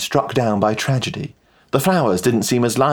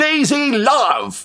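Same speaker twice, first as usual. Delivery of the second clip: very high, victorious, triumphant tone; 14 semitones higher than usual. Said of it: "I declared triumphantly".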